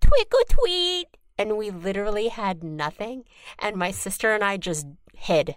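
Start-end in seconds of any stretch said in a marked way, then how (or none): 0.0-1.1 squeaky, very high, tiny cute voice. Repeating the little voice that knocked on the door: tiny cute little voice. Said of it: "the cutest, tiniest little voice".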